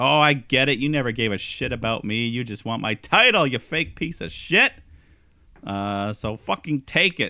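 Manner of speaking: acted-out stung, wounded, deeply hurt outburst. Retelling what a wrestler said to his partner: imitating someone hurt. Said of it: "So M J F is very hurt".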